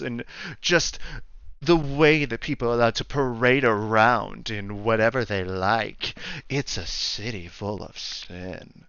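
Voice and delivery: very mocking, derisive, ridiculing put-on voice. Recounting what a man said, the speaker imitates him in a very mocking voice. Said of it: "putting on a very mocking voice".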